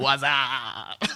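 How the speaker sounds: put-on bro voice. Teasing how friends talk to each other: Budweiser commercial "What's up". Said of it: "talk like you're in the Budweiser commercial".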